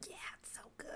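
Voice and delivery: very quiet, hushed whisper under the breath. Retelling how Mom whispers to herself during the talk: imitating someone whispering. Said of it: "whispering to herself, being like".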